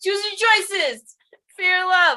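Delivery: high, obnoxious shouting in a New Jersey accent. Saying the line again as asked, in a yelling New Jersey accent. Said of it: "sound like you're like from New Jersey and you're yelling".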